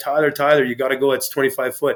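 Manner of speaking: urgent, yelling shout. Retelling yelling at a guy in a pool above a drop, retelling a yell. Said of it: "And I yelled at the guy".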